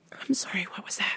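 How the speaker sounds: whispered voice. Imagining answering an upset customer, whispering. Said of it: "I'm just gonna whisper all the time".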